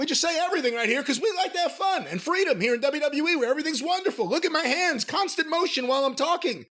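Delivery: very high put-on wrestling commentator voice, canned cadence. Making fun of wrestling commentators, in a WWE announcer voice. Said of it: "the same kind of put on announcer voice".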